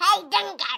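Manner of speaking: belted out at full volume. Suggesting how a pink crayon's letter should sound. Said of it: "he sounds like".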